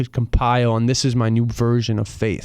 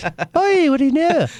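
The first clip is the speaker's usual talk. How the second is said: put-on Northern Irish accent, higher pitch; 3 dB louder than usual. Imitating the fiancée's dad, who has the accent: northern irish accent. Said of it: "Like that".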